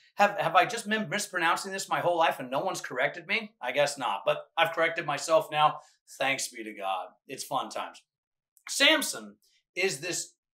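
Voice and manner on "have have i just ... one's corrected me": ordinary talk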